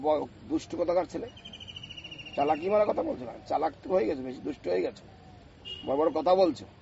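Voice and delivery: ordinary talk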